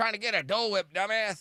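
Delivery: very high, shrill, angry scolding shout. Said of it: "she's not yelling at you".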